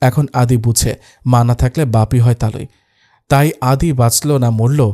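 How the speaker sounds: ordinary delivery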